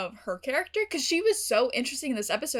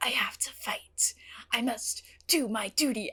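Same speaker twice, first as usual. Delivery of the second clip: intimate ASMR-style delivery, a bit overdone; 4 dB quieter than usual. Imitating David's voiceover about fighting: ASMR-style voice imitating David. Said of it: "A S M R ing".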